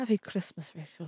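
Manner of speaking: very soft, hushed Irish accent, under the breath. Wishing Rachel a happy Christmas, in an Irish accent. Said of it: "Is that an Irish accent?".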